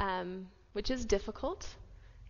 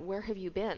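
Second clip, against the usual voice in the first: imitated nervous, frantic tone. Retelling worried parents questioning their late daughter: imitating frantic nervous parents. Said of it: "very, very nervous".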